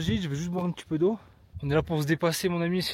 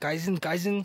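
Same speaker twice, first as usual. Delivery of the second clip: put-on German accent. A vlogger asking viewers to comment Kaizen, saying it in a German accent. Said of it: "je le dis avec l'accent allemand".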